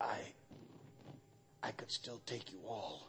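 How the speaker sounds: mock-feeble dying voice. Retelling a dying father's last words to those bending close, imitating a very weak voice. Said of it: "he says in this very weak voice".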